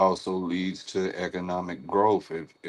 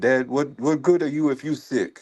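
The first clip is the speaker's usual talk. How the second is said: high put-on Nigerian accent; 7 semitones higher, 4 dB louder than usual. Retelling what the pediatrician from Nigeria said, imitating a Nigerian accent. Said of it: "she hit me with that accent".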